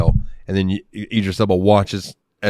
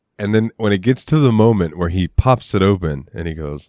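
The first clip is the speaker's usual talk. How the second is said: normal talking voice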